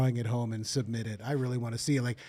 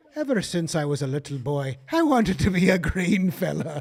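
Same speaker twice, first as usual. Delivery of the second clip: terrible, bad put-on Irish accent; 4 semitones higher, 4 dB louder than usual. Pitching a Saint Patrick's Day movie parody called Greenfellas, in a bad Irish accent. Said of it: "It's the worst accent".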